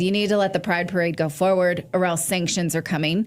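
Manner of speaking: ordinary talk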